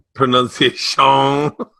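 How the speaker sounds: put-on Cajun accent. Repeating a word while practising its pronunciation, in a Cajun Man voice. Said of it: "You're doing the Adam Sandler, Cajun man".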